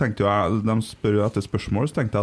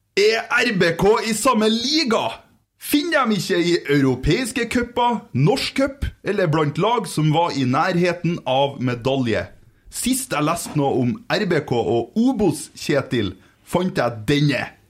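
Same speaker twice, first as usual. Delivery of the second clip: put-on Northern Norwegian accent, pitched up; 8 semitones higher than usual. Reading out a written message, in a Northern Norwegian accent. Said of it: "Skal jeg ta den på nordnorsk?".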